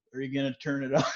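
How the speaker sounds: put-on dry, expressionless, flat, deadpan sarcasm. After hurting a foot, the speaker retells their dad's question, imitating dad's deadpan sarcasm. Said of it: "he's just like deadpan sarcasm".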